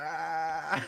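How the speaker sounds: mimicked groan. Describing Mark sitting there thinking about those plays, imitating Mark's moan. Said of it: "he was like in that moan".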